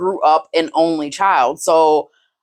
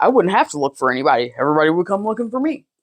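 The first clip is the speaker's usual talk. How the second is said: mocking, sarcastic tones. Retelling another speaker's words to him: imitating him with sarcastic tones. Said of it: "why are you making the tones and the sarcasm?".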